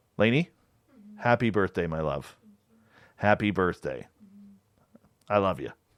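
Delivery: soft voice, full of emotion. Speaker wishing lainey a happy birthday, getting emotional. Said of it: "I got a little emotional there".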